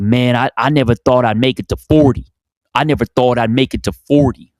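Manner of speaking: attempted California accent. Quoting a Compton gang member from a documentary, attempted Ryan Coogler accent. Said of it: "California, like Ryan Coogler accent".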